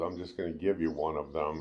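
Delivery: ordinary talk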